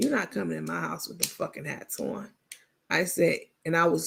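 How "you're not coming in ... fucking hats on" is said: very serious, no-nonsense voice. Retelling a warning to guests at the door: imitating own straight-faced warning. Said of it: "I said it with a straight face".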